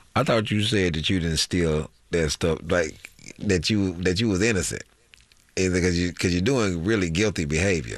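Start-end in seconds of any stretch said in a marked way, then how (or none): none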